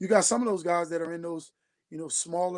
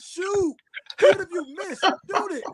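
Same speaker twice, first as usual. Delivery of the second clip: very high-pitched, urgent, urging shout; 13 semitones higher, 7 dB louder than usual. Recounting how Joe can be heard yelling, retelling a yell. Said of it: "You can hear him literally yelling".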